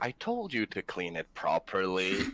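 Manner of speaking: mocking, sarcastic, swooping sing-song. Speaking in character to a stormtrooper after an accident: sarcastic. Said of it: "fucking sarcastically".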